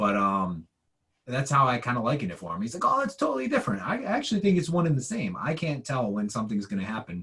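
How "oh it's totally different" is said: heavy put-on Bronx accent, very high-pitched. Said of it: "he's got this super big Bronx accent".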